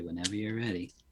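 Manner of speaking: soft, hushed mutter under the breath. In the scene, a flame licking his fingers, muttered under breath. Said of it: "I'm like under my breath".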